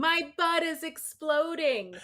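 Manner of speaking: high-pitched, shouted yelling outburst. Retelling a woman yelling to the speaker on the trail, imitating someone yelling. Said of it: "as she's yelling".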